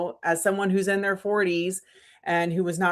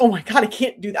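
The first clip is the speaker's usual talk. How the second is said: put-on words blurted in sheer panic; 3 semitones higher, 4 dB louder than usual. Retelling being told to film a video: retelling own panicked words. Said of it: "I straight panic attack".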